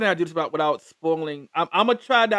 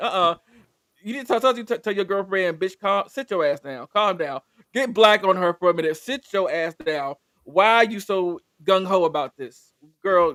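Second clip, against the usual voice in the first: usual speaking voice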